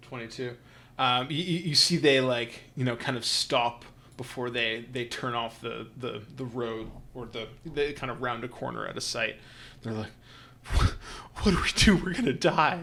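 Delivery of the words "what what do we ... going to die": high, loud, frantic, frightened panicked cry. Voicing fleeing helpers who just caught a deadly plague: panicked. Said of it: "these guys are, like, very panicked right now".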